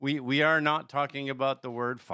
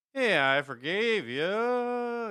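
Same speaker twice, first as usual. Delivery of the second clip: very slow mocking voice, higher, stretching "you"; 9 semitones higher than usual. Explaining that forgiveness is work, then mimicking someone in a drawn-out mocking impression. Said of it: "Like you had to draw it out".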